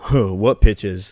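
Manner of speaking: put-on scoffing. Retelling his reply when asked about missed pitches, imitating someone scoffing.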